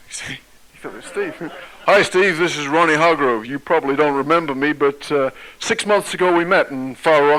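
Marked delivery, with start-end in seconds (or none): 1.8-7.2 put-on loud, bright, eager, enthusiastic American accent. Recounting a phone call from a stranger, Ronnie Hargrove, enthusiastic American accent. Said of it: "excuse the American accent".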